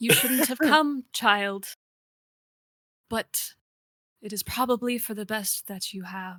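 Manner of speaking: voice cracking, held steady. Voicing Malira as a player's character enters her cell, cracked but steady. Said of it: "I'm too old to fix this myself, / [name] looks up and you can kind of see her face almost like she knew you would come. / I'm too old to fix this myself, / Her voice a little cracked but steady, / bit".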